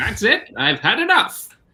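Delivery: cartoon voice with pitch swinging and swooping around. Imitating a game character going on a shooting spree: Inspector Gadget impression. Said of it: "[name]'s Inspector Gadget impression is also his Skeletor impression".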